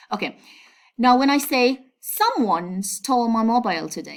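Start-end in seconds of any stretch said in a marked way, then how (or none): 2.0-4.2 "someone" singled out with heavy stress. Showing how stress changes meaning in a sentence, main stress on someone. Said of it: "by stressing the subject, I mean someone".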